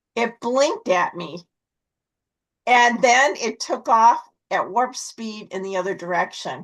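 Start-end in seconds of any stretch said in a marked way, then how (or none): none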